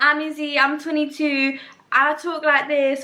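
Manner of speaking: put-on slow, nervous, on-edge, strong London accent. Imitating how own voice sounded in the video: imitating own London accent. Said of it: "I sound so London".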